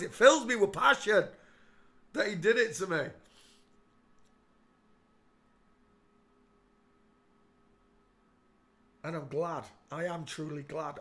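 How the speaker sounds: welling up with emotion. Talking about coming to believe in god, welling up with emotion. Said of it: "Can you hear it in my voice?".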